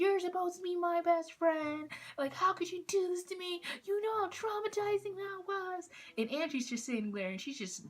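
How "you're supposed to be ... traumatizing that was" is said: mock, very high-pitched, shrill yelling. Retelling how a woman yelled at her best friend: imitating someone yelling. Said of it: "She was yelling at Angie".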